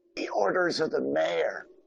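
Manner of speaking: high, hushed half-whisper, close to the ear. During a role-play, a player half-whispers in another character's ear: half-whispering. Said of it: "I'm going to whisper in his ear".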